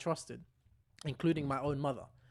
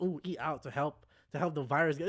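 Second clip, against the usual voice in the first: normal talking voice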